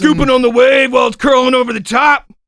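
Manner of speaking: put-on surfer stoner talk. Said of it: "when they talk like that".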